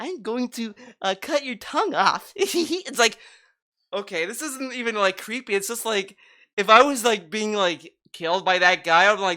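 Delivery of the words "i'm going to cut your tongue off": put-on twelve-year-old kid voice, not scary. Mocking the killer's voice, like a twelve-year-old doing a prank. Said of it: "like a twelve year old like doing a prank".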